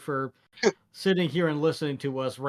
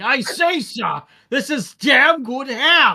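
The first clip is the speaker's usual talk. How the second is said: very high, booming, very loud comedic voice; 10 semitones higher, 9 dB louder than usual. Retelling how they praised his dad's ham, doing a Monty Python voice. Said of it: "in the Monty Python voice".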